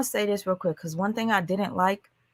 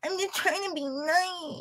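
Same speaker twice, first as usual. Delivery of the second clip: high, fake baby voice, nicely stretched; 9 semitones higher, 10 dB quieter than usual. Imitating Grams saying a line: imitating Grams. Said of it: "Let me try to be like Grams".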